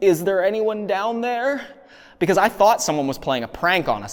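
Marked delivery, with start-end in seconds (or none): 0.0-1.6 high, scared, terrified little squeak. Retelling the own words heard on the recording: imitating own terrified squeak. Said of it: "in a really almost terrified voice, you hear me squeak out".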